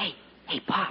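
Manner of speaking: hushed whisper. Calling pop over to tell him something, whispering. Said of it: "what are you whispering about?".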